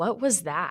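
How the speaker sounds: quiet, bone-dry delivery. Retelling what the FTO sitting in the back said, quietly. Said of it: "he just kind of quietly goes".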